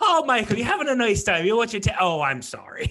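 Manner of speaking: high-pitched put-on Irish Cork accent. Recalling how he sounded after a phone call with his cousin, imitating an irish accent. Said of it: "like the accent".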